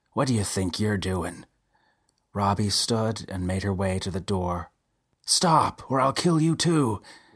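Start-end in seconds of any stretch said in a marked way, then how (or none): 5.2-7.0 manic, crazed, high-pitched, laughing between words. A man threatening a woman heading for the door, crazed, with hiccups of laughter. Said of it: "Delum sounded crazed, little hiccups of laughter".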